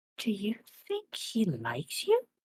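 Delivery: hushed, confiding, leaning-in half-whisper. Leaning over to ask Scrungle a question in character: half-whispering. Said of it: "lean over to Scrungle and whisper".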